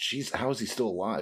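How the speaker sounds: ordinary delivery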